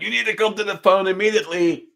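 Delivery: mock frantic, very high-pitched panicked scream. Speaker retells screaming at their mom to come to the phone: retelling a panicked scream. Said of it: "screaming at my mom in a panic".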